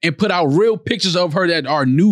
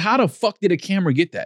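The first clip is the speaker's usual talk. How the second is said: ordinary delivery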